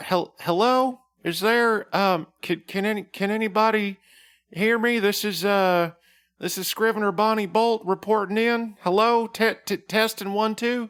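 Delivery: hesitant, stammering delivery. Voicing Bonnie Bolt coming over a phone line on speaker, tentative. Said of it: "she is tentative and says".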